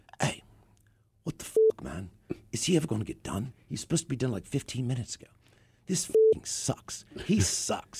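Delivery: hushed, breathy rock-star style voice. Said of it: "this is how [name] talks".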